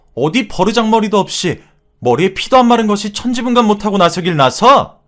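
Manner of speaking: high, loud furious yell. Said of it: "고함을 지르시며".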